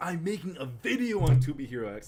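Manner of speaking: loud, high, bursting excited outburst. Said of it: "Sorry, I got so excited".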